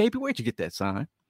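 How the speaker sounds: very sweet, honeyed woman's voice. Retelling a fan-line encounter, quoting the woman: imitating Connie's sweet voice. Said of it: "I hear the sweet, sweet woman's voice".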